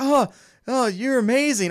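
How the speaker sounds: high, starstruck gushing, freaking out. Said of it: "he's just freaking out the whole time".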